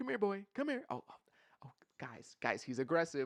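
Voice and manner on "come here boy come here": higher, mock coaxing pet-talk voice. Imitating people who treat a critic like a dog: imitating people talking to a dog. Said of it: "They were like".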